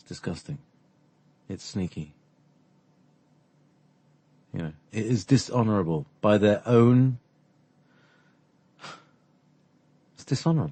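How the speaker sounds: slightly upset, somewhat agitated tone. Complaining that brothers and sisters were set against each other: a little upset. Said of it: "I'm a little upset about that".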